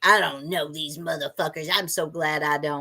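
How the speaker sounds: angry, bothered, worked-up grumbling voice. Teasing another speaker by repeating their line: imitating Jay sounding mad. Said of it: "Why you sound so mad, Jay?".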